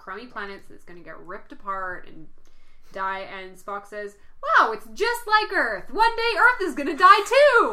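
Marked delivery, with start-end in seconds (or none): 4.4-7.7 play-acted, really cheery, chipper, bright and raised voice. Retelling a scene about a dying planet, quoting Spock in a mock-cheery voice. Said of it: "In this really cheery sort of voice".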